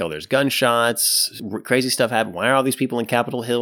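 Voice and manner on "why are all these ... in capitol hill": ordinary talk, nothing marked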